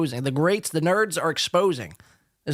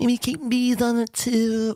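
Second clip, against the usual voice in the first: very slow, pitched-up, mocking parroting voice; 7 semitones higher than usual. Repeating a line from a clip, mocking imitation of his speech. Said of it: "why are you talking like that?".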